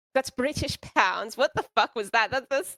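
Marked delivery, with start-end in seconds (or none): 0.1-1.3 failed British accent drifting into Russian. Repeating words on request, trying an accent: British accent slipping into Russian. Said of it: "this is getting, turning Russian".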